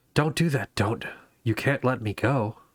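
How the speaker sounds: tiny, small inner voice. A game narrator voices the dagger in a player's head: small voice. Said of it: "you hear a small voice in the back of your head".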